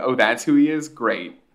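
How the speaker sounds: usual speaking voice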